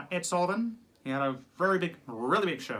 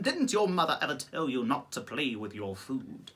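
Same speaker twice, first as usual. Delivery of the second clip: put-on animated cartoon character voice; 4 semitones lower than usual. Doing voices of film characters: Zazu voice. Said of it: "Zazu, you know, played by the wonderful Rowan Atkinson".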